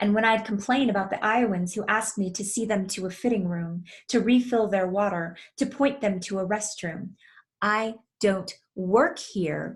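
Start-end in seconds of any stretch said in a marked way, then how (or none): 7.6-9.8 put-on gritted-teeth speech, slower. Recalling her reply to Iowans who asked her for help, through gritted teeth. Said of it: "I'd repeat through gritted teeth".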